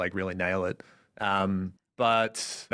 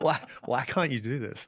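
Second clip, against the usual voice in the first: put-on mumble under breath, higher; 5 semitones higher than usual. Imitating a fluent friend mumbling at a learner: imitating Camilla mumbling under breath. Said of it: "mumbling under her breath".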